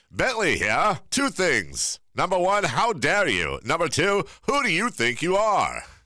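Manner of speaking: put-on high, swooping little three-year-old toddler voice. Reading a texted-in message on air in the voice of Bentley. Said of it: "That's three-year-old Bentley".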